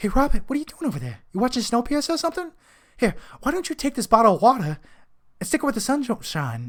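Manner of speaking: bad animated voice, high, swooping and sing-song. Performing an impression a viewer asked for: Mark Wahlberg impression. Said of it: "do your Mark Wahlberg impression".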